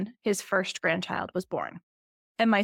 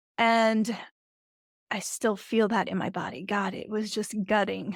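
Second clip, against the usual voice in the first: choked-up voice, catching and breaking. Recounting a phone call where he refused to hear about his grandson, choking up. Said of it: "as I'm choking up now".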